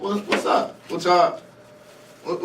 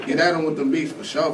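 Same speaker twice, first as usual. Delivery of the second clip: usual speaking voice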